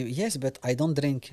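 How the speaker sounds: put-on Arabic accent, words drawn out slowly. Retelling his own reply to a man urging him to drink: Arabic accent. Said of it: "je te le fais avec l'accent arabe".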